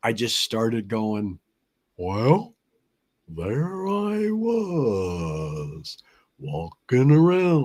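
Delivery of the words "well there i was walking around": very slow, swooping dog voice, "was" stretched out. Retelling improvising a show alone by a studio banner: Goliath the dog voice. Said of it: "That was the voice I used".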